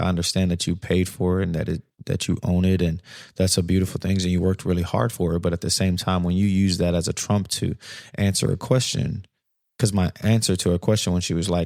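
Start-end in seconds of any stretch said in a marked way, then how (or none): none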